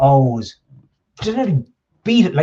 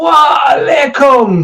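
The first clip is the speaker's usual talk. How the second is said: mock very high, loud, booming call; 12 semitones higher, 5 dB louder than usual. Retelling how a man greeted a whole cafe; imitating a booming greeting. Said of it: "and his booming voice".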